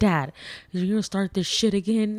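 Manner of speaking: worked-up, angry, exasperated outburst. Retelling how the son snapped at his dad: imitating son getting mad. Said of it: "He got so mad at him".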